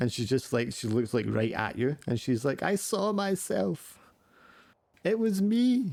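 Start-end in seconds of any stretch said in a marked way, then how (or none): 2.6-5.9 put-on very high, slow, drawn-out sobbing child voice. Voicing a sobbing girl who looks right at you: sobbing girl. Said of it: "the wee girl is, like, sobbing".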